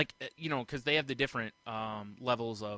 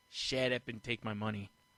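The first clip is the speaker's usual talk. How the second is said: ordinary talk, nothing marked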